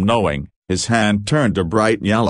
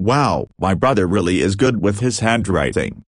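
ordinary delivery, nothing marked

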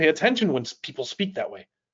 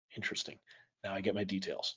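usual speaking voice

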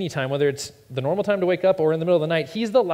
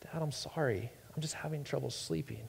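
put-on child voice near tears, much quieter; 2 semitones lower, 17 dB quieter than usual. A dad retells his child at bedtime, imitating child almost crying. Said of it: "almost cry a little bit".

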